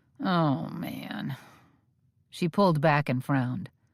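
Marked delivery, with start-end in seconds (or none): 0.2-1.4 pained groan, quieter. Reading a hospital patient's response when asked to talk: groaning. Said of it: "He groaned".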